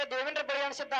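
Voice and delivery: ordinary delivery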